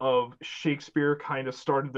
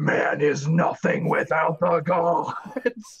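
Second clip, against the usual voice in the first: loud, very slow, booming godlike voice; 2 semitones higher, 5 dB louder than usual. Retelling the scene where Odysseus yells at the sea: imitating Poseidon. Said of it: "hear Poseidon".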